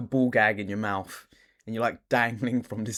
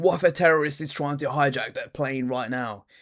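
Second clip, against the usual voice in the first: acted-out ranting outburst with screaming; 5 semitones higher than usual. Imagining a passenger being screamed at on a plane: imitating someone screaming. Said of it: "starts screaming at you like".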